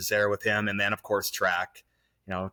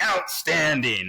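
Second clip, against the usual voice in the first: slow, drawn-out praising tone. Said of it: "And he's like".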